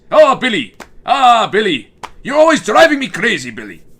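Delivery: loud, swooping, heavily laid-on Jamaican accent. Trying out a character voice addressed to Billy, in a Grimm voice with Jamaican accent. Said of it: "you add the Jamaican accent".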